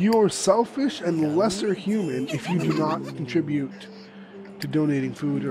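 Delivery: ordinary talk, nothing marked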